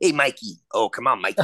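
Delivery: thick put-on East Coast accent, laid on. Imitating a guy who had a thick East Coast accent. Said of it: "he had such a thick East Coast accent".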